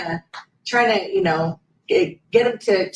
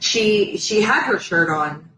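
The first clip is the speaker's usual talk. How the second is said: ordinary talk, nothing marked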